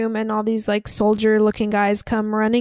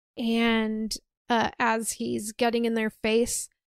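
normal talking voice

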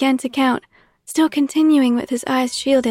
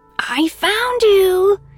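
put-on high, squeaky, childlike voice; 8 semitones higher, 3 dB louder than usual. Narrating a searcher finding someone behind a headstone, in a squeaky childish voice. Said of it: "He squeaked his childish tone of voice".

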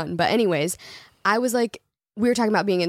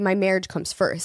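ordinary delivery

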